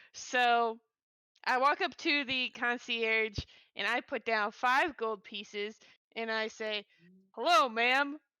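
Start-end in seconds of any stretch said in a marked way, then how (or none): 7.3-8.1 loud, very rustic Southern drawl. A player character greets a concierge while paying for a room, very rustic southern drawl. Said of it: "in my very rustic southern drawl".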